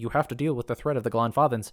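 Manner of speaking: plain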